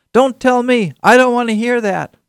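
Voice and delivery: very high, loud, shrill protesting tone. Describing people who refuse to listen, acting out their reply in a loud voice. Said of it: "say in a loud voice".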